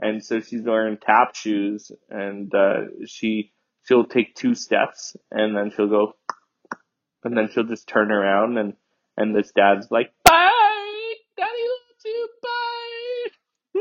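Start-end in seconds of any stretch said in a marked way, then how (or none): 10.2-13.8 very high, very slow, drawn-out helium squeak. Retelling how a dad says goodbye to his daughter: imitating a dad's helium-high voice. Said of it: "he's just inhaling more helium as he speaks to her".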